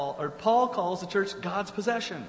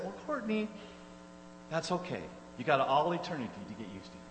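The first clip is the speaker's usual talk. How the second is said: flat deadpan, much lower and quieter; 4 semitones lower, 6 dB quieter than usual. Recounting a reply to someone's remark about a neighbor, retelling a deadpan reply. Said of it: "deadpan as I could".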